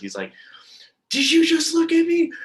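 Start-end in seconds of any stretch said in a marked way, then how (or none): 1.1-2.3 very high, very loud, shrill scream. Retelling a man screaming from outside the bus, imitating a screaming man. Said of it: "he started screaming from outside of the bus".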